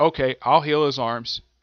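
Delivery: normal talking voice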